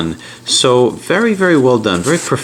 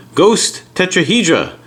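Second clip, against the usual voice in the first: French read with an American accent. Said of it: "sorry about my American accent".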